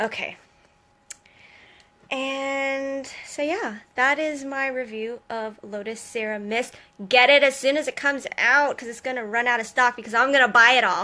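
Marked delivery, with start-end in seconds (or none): 0.0-3.8 very slow, sighing, sighed-out, drawn-out delivery. Wrapping up a review of a serum mist for viewers, sighing.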